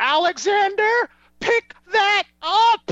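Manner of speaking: high, slow, scolding voice. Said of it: "and she goes".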